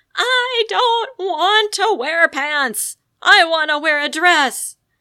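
high, very loud, furious angry bellow. Retelling how she stormed back into the kitchen, the speaker repeats her angry bellow. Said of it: "she bellows".

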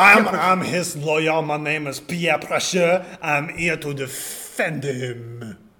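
put-on French accent throughout. In an improvised interrogation scene, a lawyer introduces himself to defend the suspect: put-on French accent. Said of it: "Why are you being French?".

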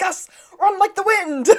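shrill, very high scream. Recapping an episode where a friend falls down a hill: retelling a scream. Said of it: "Sean screams".

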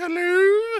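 very high, strained, squeaky mock voice.

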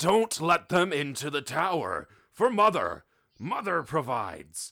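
high-pitched, loud yell with swooping pitch. Game master voicing a halfling who spots the party, yelling to the guards. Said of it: "he yells to the guards".

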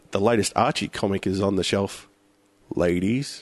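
suggestive, innuendo-laden, deliberately sexual delivery. Showing another speaker how a line sounds wrong: suggestive delivery. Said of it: "have a listen to this".

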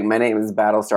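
mock smug, self-satisfied, self-important delivery. Retelling how a character introduced himself: imitating a smug tone. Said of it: "he says it in that smug way".

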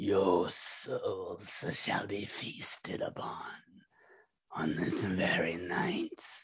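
breathy, whispered monster creature voice. Narrating the scene, the speaker voices the creature speaking telepathically to the group. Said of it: "you all hear it speak out telepathically".

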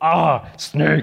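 put-on manly voice. Retelling a shout on spotting a snake, in a mock manly voice. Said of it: "in a manly voice".

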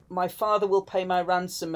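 plain

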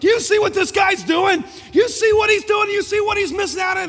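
full-throated, very high, very loud hollering. Retelling yelling at a character while reading scripture: retelling own yelling. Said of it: "I'm yelling".

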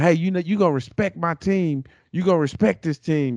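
high-pitched, heated yelling like a coach. Speaker retelling their head coach yelling during a scuffle at the fifty-yard line: retelling a coach's yelling. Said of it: "our coach was yelling".

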